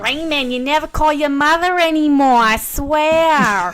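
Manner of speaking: fake Boston accent, swear word drawn out. Imitating a mother talking to her son, in a fake Boston accent. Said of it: "She does it better than I do".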